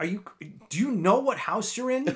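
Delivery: imitated female yelling. Retelling how a woman yelled at them, retelling her yelling. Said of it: "she's like yelling at me".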